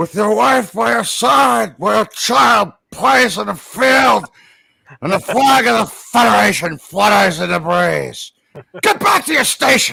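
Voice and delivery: loud, rough-edged, pushed-out actor voice. Doing the only Star Trek-related impression they can manage: Christopher Lloyd impression. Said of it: "The the only Christopher Lloyd impression I can do".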